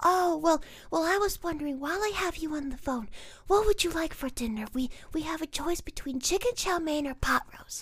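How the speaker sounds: high motherly voice. Acting out a film scene where the mom talks to her child on the phone, imitating the mom's voice. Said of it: "So here's the mom".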